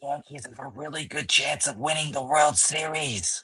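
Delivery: whispering. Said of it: "There's that fucking whisper again".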